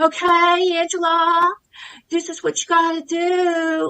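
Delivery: mock, very slow, drawn-out, high patronising tone. Describing how a life coach talked to them, mimicking talking down to a child. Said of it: "his tone of voice sounded like I was like a five year old child".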